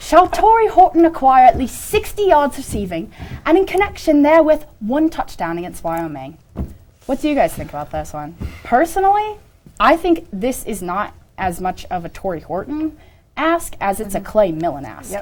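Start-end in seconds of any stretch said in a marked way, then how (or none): 0.0-6.4 reading aloud in a put-on British accent. Speaker reads a sports proposition aloud as requested, in a british accent. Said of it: "I was requested to read these in a British accent".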